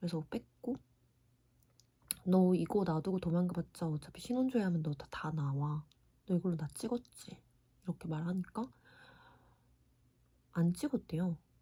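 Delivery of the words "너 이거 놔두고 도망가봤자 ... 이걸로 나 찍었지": normal talking voice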